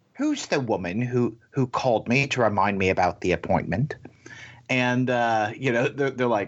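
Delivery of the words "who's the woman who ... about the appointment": put-on British accent. Retelling what a patient asked at a doctor's desk: imitating a british accent. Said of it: "this woman with a British accent goes".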